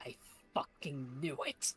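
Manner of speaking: whispered, barely voiced, hushed mutter. Voicing a tense character reacting to news: muttering under his breath. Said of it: "muttering under his breath".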